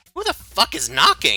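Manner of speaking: put-on angry character voice. Voicing Balkuma reacting to a knock at the door: voicing Balkuma. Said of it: "you guys hear Balkuma, like, speak up, and he's like".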